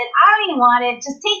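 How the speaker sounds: ordinary delivery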